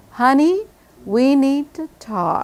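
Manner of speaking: descending tune, starts high on honey, drops low. Imitating how a woman says a scary phrase, pitch falling from high to low. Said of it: "When a woman's voice goes from here down to here".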